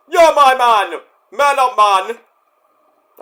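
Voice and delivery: put-on Jamaican accent, drawn-out, high and loud. Quoting a man from the group who talks like a jamaican guy, in a jamaican accent. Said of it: "the man who talks like a uh, a Jamaican guy".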